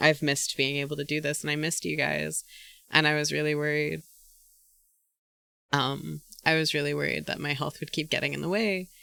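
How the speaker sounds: teary, tearful speech, crying while talking. Thanking viewers for their patience after a stream: crying while talking. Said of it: "Oh, why am I crying?".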